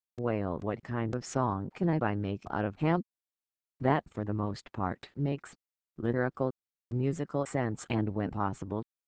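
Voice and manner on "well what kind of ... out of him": ordinary talk, nothing marked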